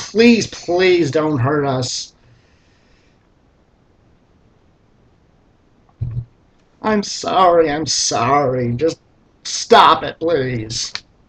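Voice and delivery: pleading, groveling, begging tone. Recounting a game where a beaten god begged the party: imitating pleading. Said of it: "the god was fucking pleading".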